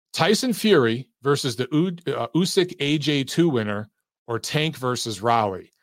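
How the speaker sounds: ordinary talk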